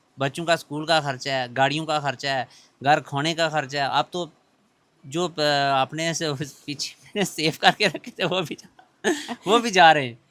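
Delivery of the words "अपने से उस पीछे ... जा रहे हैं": slow speech with laughing through it. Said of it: "नहीं, हंस रहे हो".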